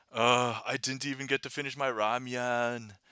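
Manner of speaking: slow groaning grumble. Retelling a movie scene, voicing Mira: Mira complaining and groaning. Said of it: "starts to complain and groan".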